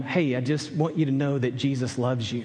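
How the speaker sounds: ordinary delivery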